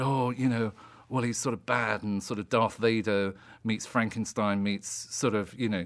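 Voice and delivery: ordinary delivery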